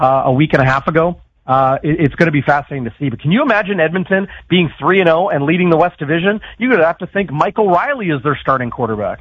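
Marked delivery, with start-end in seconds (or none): none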